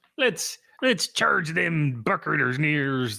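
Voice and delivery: put-on Irish accent. Co-host rallies for the game with Jeff, trying to do an Irish accent. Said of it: "trying to do an Irish accent".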